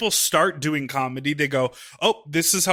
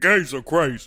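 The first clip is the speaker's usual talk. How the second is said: put-on dude voice. Retelling how a straight trainer talked: imitating a straight man. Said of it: "that's our straight man impression".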